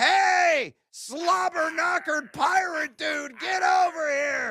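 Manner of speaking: very high, drawn-out holler. Pausing the show to yell at a drunk at the bar: mock yelling at a drunk. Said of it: "I gotta yell at this drunk at the bar".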